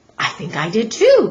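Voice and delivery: quavering, trembling, quivery voice. Narrator reading a story, Max answers the other sneak thief in a quivery voice. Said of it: "said Max in a quivery voice".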